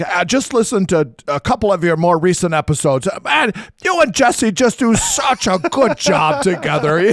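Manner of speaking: spot-on fatherly voice. Retelling a phone call with a father: Dave Boyce impression. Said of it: "That's a great Dave Boyce impression right there".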